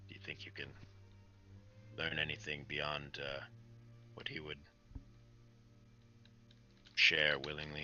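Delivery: very quiet, breathy, hushed whisper. Narrating a scene, voicing a character who whispers to the shaman. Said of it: "He he kind of whispers".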